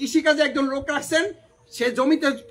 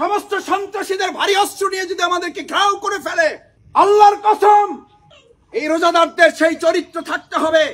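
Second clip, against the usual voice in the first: yelling, higher and louder; 6 semitones higher, 7 dB louder than usual. Preaching to worshippers on an Eidgah field without a mic: shouting. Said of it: "এই চিৎকার করে যে কথা বলছি".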